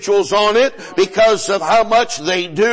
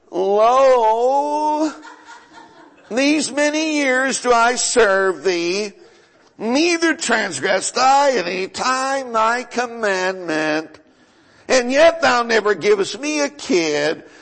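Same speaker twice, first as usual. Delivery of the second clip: play-acted whiny bellyaching, "lo" drawn out; 2 semitones higher than usual. Impersonating how the man in verse 29 sounded, imitating a whiny complaint. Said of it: "Hear him whine".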